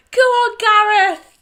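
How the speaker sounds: put-on shouting. Retelling how she shouted at every runner: imitating someone shouting. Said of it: "She kept shouting it".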